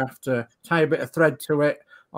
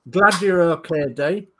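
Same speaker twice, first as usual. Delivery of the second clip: plain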